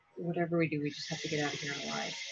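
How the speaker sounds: hushed, very quiet half-whisper. Voicing a character urging an ally to escape: half-whispering in character. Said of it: "And I'm whispering this".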